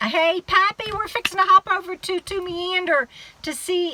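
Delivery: high, loud hollering, as if to someone far. Telling viewers about hopping over to another channel: yelling. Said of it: "I'm yelling like I need to yell".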